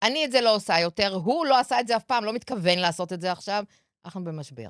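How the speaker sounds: plain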